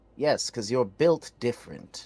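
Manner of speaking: plain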